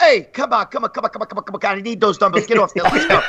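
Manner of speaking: insistent, pushy, hurrying nagging tone. Retelling a big man at the gym demanding dumbbells: imitating Charlie Humps. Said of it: "fucking Charlie Humps goes".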